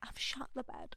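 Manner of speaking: hushed, breathy, barely voiced whisper. Retelling a friend's early morning phone call: imitating a whisper. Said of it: "she was whispering".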